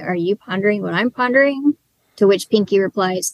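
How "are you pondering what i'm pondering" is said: ordinary talk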